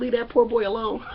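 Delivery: plain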